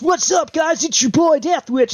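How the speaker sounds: put-on hyped, energetic video intro voice. Showing how a typical YouTuber intro would sound: put-on YouTuber voice. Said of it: "I could put on the YouTube voice".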